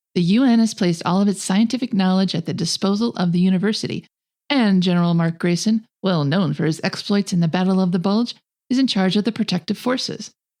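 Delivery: ordinary talk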